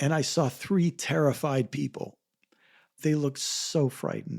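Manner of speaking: choked-up voice cracking and breaking with emotion. Recalling first seeing a frightened family at the airport: choked up. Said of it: "I get choked up as I say this".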